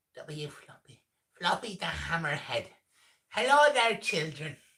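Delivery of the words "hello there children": badly done, high, loud, shaky put-on Irish accent. Inventing a voice for the character Floppy the Hammerhead: high-pitched put-on Irish accent. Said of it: "I'm kind of doing like a high pitched Irish accent".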